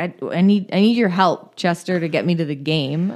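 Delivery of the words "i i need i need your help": plain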